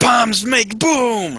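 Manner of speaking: very high, slow goblin squeal.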